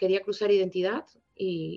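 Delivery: ordinary talk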